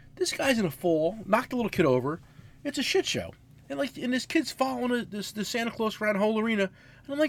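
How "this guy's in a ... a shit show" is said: normal talking voice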